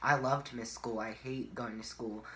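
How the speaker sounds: plain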